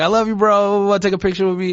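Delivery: put-on thick Argentine accent. Retelling a fan from Argentina at the airport: imitating a thick Argentine accent. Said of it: "a thick accent".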